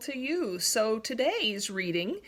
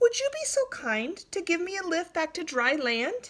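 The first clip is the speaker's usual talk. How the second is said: tiny, high, wee small voice; 7 semitones higher than usual. Narrator voicing the Ant calling to the Mud Turtle, in a wee, small voice. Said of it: "called the Ant in his wee, small voice".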